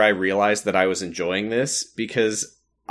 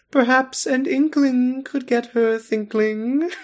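very high storybook cat voice. Retelling the Cheshire Cat's reply to Alice, doing your best Cheshire Cat voice. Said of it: "I can't do Jim Cummings' voice justice".

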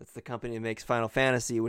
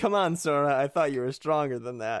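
put-on passive-aggressive ghostly voice, higher; 3 semitones higher, 4 dB louder than usual. Quoting a character encouraging sora, in a put-on passive-aggressive ghost voice. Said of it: "passive aggressive dick when he said like a ghost voice".

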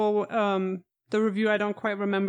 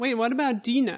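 ordinary talk

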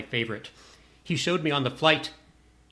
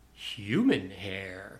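put-on strange quizzical tone, very low; 7 semitones lower than usual. Retelling answering a game host in front of frat boys, retelling own odd tone. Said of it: "in sort of that odd tone of voice I just said it in".

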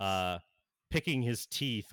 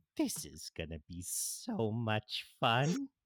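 hushed half-whisper, very close and intimate. A narrator voices Harley Quinn half-whispering in the listener's ear during a hug. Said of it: "you hear whisper in your ear".

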